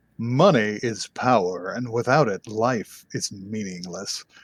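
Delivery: slow, dramatic, theatrical narrator reading voice. Reading a passage aloud in a dramatic reading voice. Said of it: "I want to put in my dramatic reading voice".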